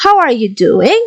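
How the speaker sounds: rising intonation at the end on "doing". Explaining intonation, a speaker gives an example question: rising intonation at the end. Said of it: "we like raise our voice at the final".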